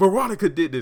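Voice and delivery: high, loud accusing outburst blurted out. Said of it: "and then he's like".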